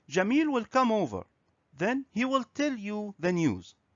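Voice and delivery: ordinary talk, nothing marked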